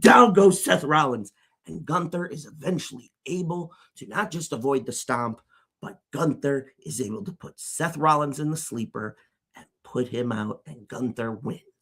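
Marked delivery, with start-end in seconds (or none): 0.0-1.3 put-on old-time boxing commentator voice. Recounting a wrestling match where Seth Rollins goes down, in an old boxing commentator voice. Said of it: "I sound like the boxing commentator".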